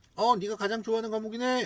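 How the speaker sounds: teasing, high-pitched tone.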